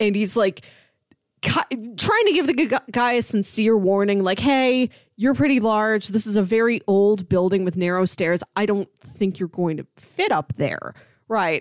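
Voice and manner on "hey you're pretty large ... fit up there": put-on brash, harsh, blunt and tactless tone. Retelling a character's warning to a large tourist: imitating a brash, harsh warning. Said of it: "he says it in this very brash manner, comes off very harsh".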